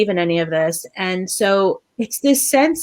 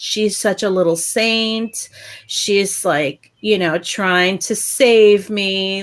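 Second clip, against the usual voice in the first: ordinary talk, nothing marked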